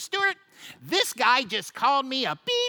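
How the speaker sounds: high, nasal voice with swooping pitch. Retelling what Phil said when he came over: high nasally voice. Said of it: "he comes over with this high nasally voice and he goes".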